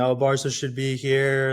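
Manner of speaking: screaming, whining, whiny complaining yell. Retelling how people complained about the final: imitating whining, yelling fans. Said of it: "kinda screaming and whining and yelling".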